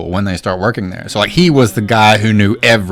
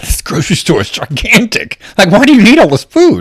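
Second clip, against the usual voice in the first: put-on very high-pitched heavy German accent; 11 semitones higher, 4 dB louder than usual. Retelling a visiting friend's reaction to an American grocery store: imitating Kevin's thick German accent. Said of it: "with a very thick German accent".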